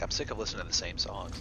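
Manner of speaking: ordinary talk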